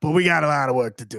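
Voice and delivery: New York accent suddenly creeping in. Discussing a player's defense: sudden New York accent. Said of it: "I don't know where this accent came from".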